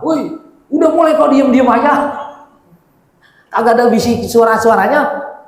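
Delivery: high, loud, nagging, fed-up complaint. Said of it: "komplain mama".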